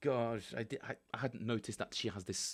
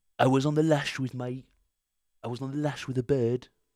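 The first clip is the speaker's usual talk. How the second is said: put-on British accent, slower pace; 4 semitones higher, 12 dB louder than usual. After asking listeners to imagine it, doing a British Donald Trump impression. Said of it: "Imagine British Donald Trump".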